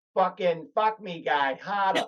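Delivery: put-on Boston-accented voice. Imagining a porn star talking dirty in bed: boston accent. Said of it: "porn star with a Boston accent".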